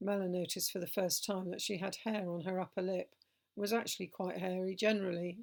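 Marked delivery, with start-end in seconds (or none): none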